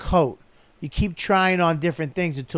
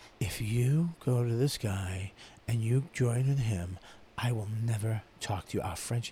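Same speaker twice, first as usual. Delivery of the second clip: very quiet stage whisper, half-whispered; 6 semitones lower, 10 dB quieter than usual. Retelling how an actor delivered a line in a scene: imitating a half-whisper. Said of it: "He literally whispers it".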